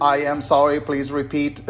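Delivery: flat, mechanical, robotic automated-system voice. Contrasting AI voices with a robotic one, demonstrating in a robot voice. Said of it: "This is my robot voice".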